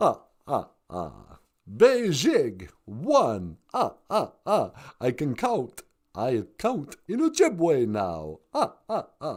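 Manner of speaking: very deep character voice with wide swooping pitch. Doing another impression after Cookie Monster: the Count voice. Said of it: "the Count".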